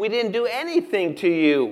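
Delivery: high, loud, insistent voice.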